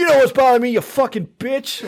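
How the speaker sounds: play-acted, very high, shrill horror-movie scream. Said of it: "You can't do it talking".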